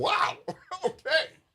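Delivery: very high, laughing, thrilled delighted exclamation. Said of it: "It was like".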